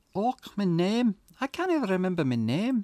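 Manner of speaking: put-on slipping into Scottish accent. Performing a scripted monologue, the speaker slips into a Scottish accent. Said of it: "I've gone Scottish again".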